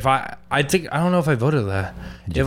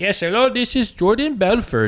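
heavy put-on Indian accent, pitched up; 7 semitones higher than usual. Retelling how someone introduced himself to the speaker, in a super thick Indian accent. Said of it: "super thick Indian accents".

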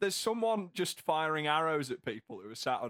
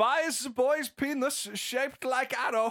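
loud, high, put-on German accent; 10 semitones higher, 5 dB louder than usual. Reading the first item aloud on request, in a put-on German accent. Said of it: "take this first one in a German voice".

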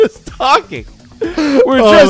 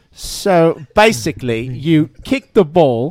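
put-on British accent, much lower; 8 semitones lower, 3 dB quieter than usual. Challenged to teach soccer using a british accent, the speaker begins: put-on british accent. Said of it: "you have to use a British accent".

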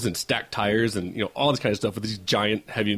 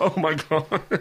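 high cry bursting out in the middle of laughing; 7 semitones higher than usual. Retelling their own reaction when he takes off: retelling laughing exclamation. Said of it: "I could not stop laughing".

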